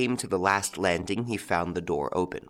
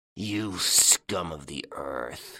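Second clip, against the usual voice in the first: growling, very slow, deliberate; 3 semitones lower than usual. A man answers another man's mocking promise, growled. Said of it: "growled Ganimard".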